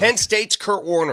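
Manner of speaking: high-pitched yell. Arguing about a football player's name with another speaker: yelling. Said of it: "Why are you yelling at me?".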